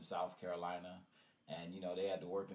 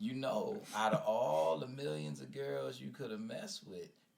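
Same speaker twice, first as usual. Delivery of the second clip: put-on slightly higher Southern old woman drawl. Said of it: "That's how she said it".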